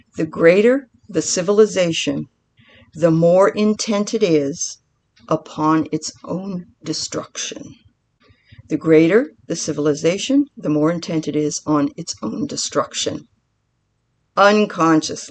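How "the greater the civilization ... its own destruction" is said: careful, spelled-out delivery, said twice. Speaker repeating a quote that really blew them away, said really slowly. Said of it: "I'm going to say it really slow".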